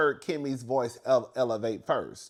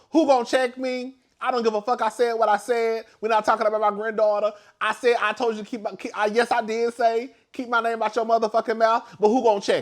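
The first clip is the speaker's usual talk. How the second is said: put-on defiant attitude, higher and louder; 10 semitones higher, 5 dB louder than usual. Retelling how Nell sat with legs crossed: imitating Nell's defiant energy. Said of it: "That's what Nell was giving".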